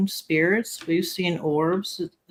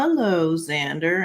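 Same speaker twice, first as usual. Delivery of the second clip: lower-pitched radio announcer voice; 3 semitones lower than usual. Retelling how the son's late father greeted the son, in a radio announcer voice. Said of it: "sound like a radio person".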